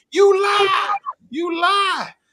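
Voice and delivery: very high, very slow, drawn-out screaming yell. Retelling screaming at a speaker from the convention floor: imitating a scream. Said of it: "I'm on the floor about a hundred fifty feet away from him screaming".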